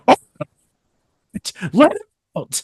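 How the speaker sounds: mock angry outburst. Telling how someone got mad about a person stuck in a locker: retelling an angry outburst. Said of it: "Cooper gets really mad and he says".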